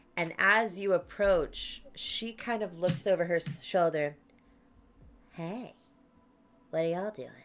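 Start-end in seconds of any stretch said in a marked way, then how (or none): 5.4-7.3 quick put-on fairy voice. Narrating to players who approach, speaker voices a fairy holding a flyer: fairy character voice. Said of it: "It's a good voice though".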